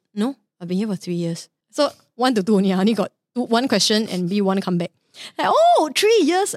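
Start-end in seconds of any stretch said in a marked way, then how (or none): 0.2-1.5 mock deadpan, flat tone, faster pace. Retelling a library worker's answer to his question, mock-deadpan reply. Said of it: "she was very deadpan".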